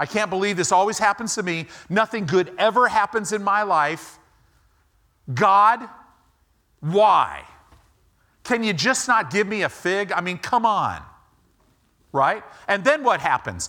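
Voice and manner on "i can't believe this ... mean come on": mock tantrum voice, higher pitch. Acting out how people complain to god: imitating a temper tantrum. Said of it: "They throw a little temper tantrum".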